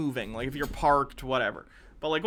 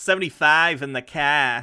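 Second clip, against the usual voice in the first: mock Boston accent, louder; 6 dB louder than usual. Mimicking a driver from a video: imitating a boston accent. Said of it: "What is this accent?".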